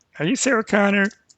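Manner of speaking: put-on, whiny, high-pitched voice. Trying out a voice that you admit needs work, do a whiny, bad Pee-wee impression. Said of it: "kind of whiny".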